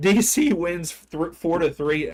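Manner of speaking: voice cracking, breaking mid-phrase. Speaker announcing a match result, voice cracking. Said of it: "I think my voice just cracked there".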